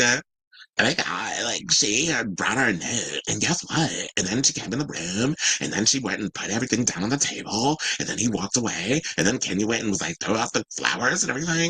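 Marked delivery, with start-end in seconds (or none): 1.7-11.7 put-on vocal fry voice. Recapping a clip's events for a co-host, in a Kim Kardashian vocal fry voice. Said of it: "why are you talking like Kim Kardashian?".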